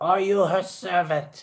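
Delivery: raspy, hoarse, high creature voice. Game narrator voicing the Ewok questioning the Lepi; raspy Ewok voice. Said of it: "The Ewok again in his raspy voice".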